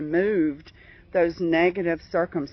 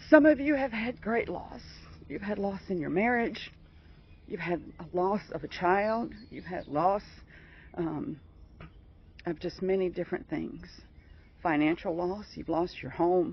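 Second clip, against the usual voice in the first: voice catching, choked up with emotion; 5 dB quieter than usual. Speaker addresses listeners who have suffered great loss, choked up. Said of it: "I'm getting choked up".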